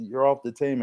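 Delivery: ordinary delivery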